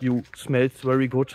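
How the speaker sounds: slow, broken English.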